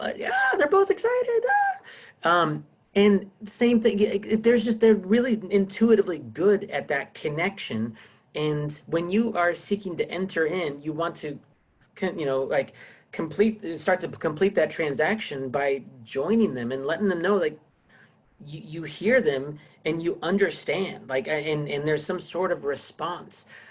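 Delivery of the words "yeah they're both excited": very high, excited phone voice. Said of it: "The voice goes up".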